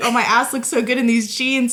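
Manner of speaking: ordinary talk, nothing marked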